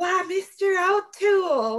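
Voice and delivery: put-on American Southern accent. Imagining how a woman will address Mr. O'Toole on the farm, southern accent. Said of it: "let me bring on my southern accent".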